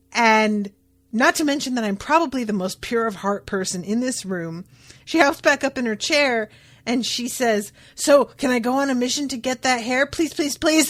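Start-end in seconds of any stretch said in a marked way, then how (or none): 7.9-10.9 mock desperate, cutesy pleading voice, higher-pitched. Retelling a character's begging to go on a mission: imitating desperate cutesy pleading. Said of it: "desperate and cutesy".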